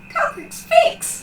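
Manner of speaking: put-on very high, loud, childlike tiny-kid voice. Narrating a jackalope that tilts its head and speaks, in Eep's high-pitched childlike voice. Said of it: "says in a high-pitched, childlike voice".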